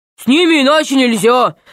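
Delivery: growled, troll-like voice. A narrator reading a troll answering the four-eyed one, growling. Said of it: "прорычал тролль".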